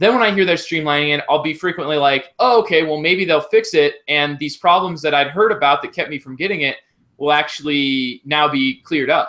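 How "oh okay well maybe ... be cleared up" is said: normal talking voice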